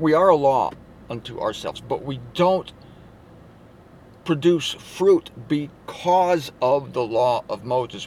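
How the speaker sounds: measured, carefully paced. Repeating a point to listeners so it sinks in, said a little slower. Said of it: "Let me say that again a little slower".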